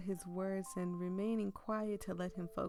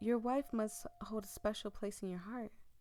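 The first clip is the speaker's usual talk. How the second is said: usual speaking voice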